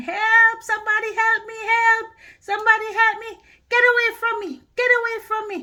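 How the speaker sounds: put-on shrill, high, loud, frantic screaming. Retelling being attacked by a dog, reenacting own screaming for help. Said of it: "And I'm screaming".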